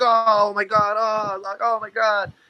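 mock very slow, high, cringing freaked-out reaction. Speaker retells how the man who broke his arm reacted, acting out a freaked-out reaction. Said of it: "He was even more freaked out than me".

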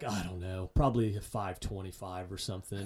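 put-on downcast voice. Retelling a man's answer to his question about road miles, imitating a dejected voice. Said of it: "in a very almost dejected voice".

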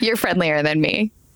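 playfully teasing, ribbing. Answering a conversation partner who just described their way of working, teasing. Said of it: "I'm teasing you".

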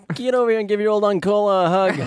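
put-on high Italian uncle voice and accent. Acting out Uncola as a cool uncle who wants a hug: Italian uncle voice. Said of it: "Like an Italian uncle".

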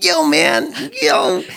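very high, creaky, rough, casual dude-speak voice. Describing the sound engineer who introduced them, imitating Johnny. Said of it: "I feel like I have to imitate this".

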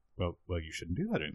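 dry, understated, underplayed delivery carrying no weight. Retelling a film line about quitting smoking: imitating a muted deadpan delivery. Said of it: "the deadpan delivery".

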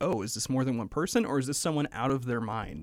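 plain

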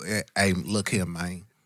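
put-on Memphis accent, film-character style delivery. Showing how Terrence Howard sounds in Hustle and Flow: Terrence Howard Hustle and Flow voice. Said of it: "that's Terrence Howard from Hustle and Flow".

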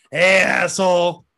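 mock drunk, loud, sloppy woman's calling-out voice. Picturing her drunk and disheveled, imitating a drunk woman. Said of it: "imagining her, like, drunk and disheveled".

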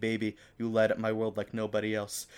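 ordinary talk

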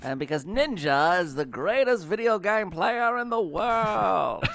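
very high put-on announcer voice, drawn-out "world". Making a point to the others on the show, in a radio voice. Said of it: "is this going to be your radio voice?".

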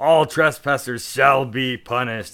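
slow, drawn-out warrior scream. Voicing a large dwarf at the end of his turn, screaming out. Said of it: "he's just like starts screaming out".

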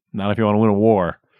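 normal talking voice

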